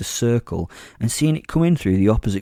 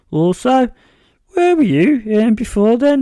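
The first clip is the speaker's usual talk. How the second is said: very high, loud, squeaky voice cracking like puberty; 13 semitones higher, 5 dB louder than usual. Narrator reads a character's small-talk question, in a squeaky, cracking mid-puberty voice. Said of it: "in a mid-puberty squeaking, cracking voice".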